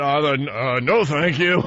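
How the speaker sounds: nervous swallowing sound. Retelling own reply to the flight attendant: retelling a nervous gulp. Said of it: "I gulped and went".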